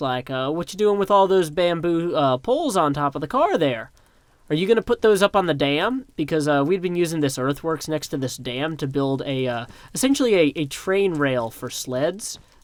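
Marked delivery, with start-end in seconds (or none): 0.5-6.1 stern police officer voice. Retelling being pulled over by police: imitating a Tullahoma police voice. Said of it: "this is what we in Tullahoma call, like, the police voice".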